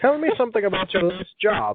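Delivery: put-on old-timey voice. Reading out question number eleven in an old-timey voice. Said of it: "I'm going to read this in an old-timey voice".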